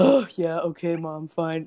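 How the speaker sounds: put-on, totally chill, unbothered, easygoing tone. Retelling a daughter's reply to her mother's excitement: imitating Nina, very chill. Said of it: "totally chill".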